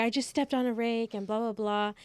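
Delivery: frantic, fully hysterical, out-of-control blurt. Retelling telling mom about stepping on a rake: imitating own hysterical self. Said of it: "like, hysterical".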